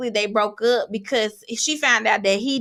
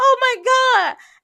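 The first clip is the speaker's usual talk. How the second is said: put-on very high, loud, tearful crying gasp; 14 semitones higher, 5 dB louder than usual. Retelling how a woman reacted to a kneeling partner: imitating someone crying.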